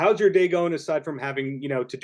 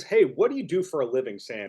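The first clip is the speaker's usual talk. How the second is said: ordinary talk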